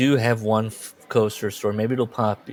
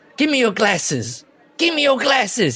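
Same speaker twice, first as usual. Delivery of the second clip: very high, loud, repeated, swooping shouting; 13 semitones higher, 4 dB louder than usual. Retelling a dad on a ride with his screaming kid: imitating a dad shouting. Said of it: "He keeps shouting at his kid".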